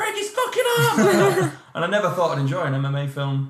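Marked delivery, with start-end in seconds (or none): 0.0-1.5 high-pitched shrieking yell. Recalling the end of a martial arts film, retelling screaming at the film. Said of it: "I was screaming at the film".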